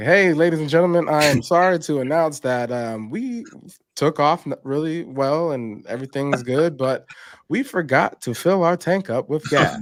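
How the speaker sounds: put-on airline pilot cabin intercom announcement voice. Joking about a pilot's announcement to passengers: put-on airline pilot announcement. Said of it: "Airplane pilot goes up in the air. Like".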